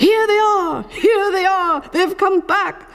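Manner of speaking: high-pitched, excited shouts. Reading a children's story, a crowd of running elephants greets the arrivals, shouting. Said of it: "running and shouting".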